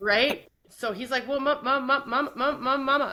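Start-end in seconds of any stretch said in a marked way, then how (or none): 1.3-3.1 put-on high kid voice, stammering, tripping over the same word. Retelling how her son answers when in trouble: imitating son stuttering. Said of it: "when he gets in trouble, he stutters".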